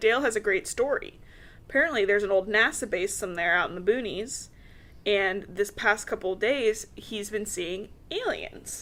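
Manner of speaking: ordinary delivery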